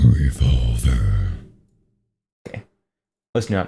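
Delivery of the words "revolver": very low, echoing put-on growl with reverb. Copying another speaker's joke voice: put-on growl voice with reverb. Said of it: "I can do that".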